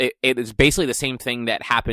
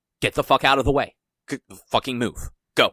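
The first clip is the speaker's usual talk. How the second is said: put-on frantic, freaking-out voice; 2 semitones higher than usual. Retelling a movie scene of a pit lane blocked: imitating Lauda freaking out. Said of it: "Lauda's just, like, freaking the fuck out".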